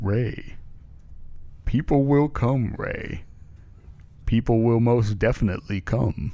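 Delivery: put-on reassuring voice, total certainty. Asked to reassure Ray about tour ticket sales: James Earl Jones voice. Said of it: "your expertise of James Earl Jones".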